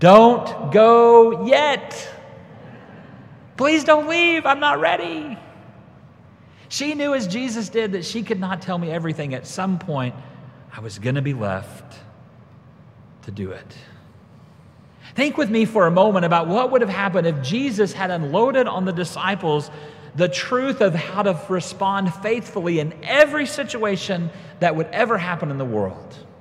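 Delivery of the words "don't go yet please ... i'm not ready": high, loud yell with a begging, pleading tone. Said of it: "And I yelled out".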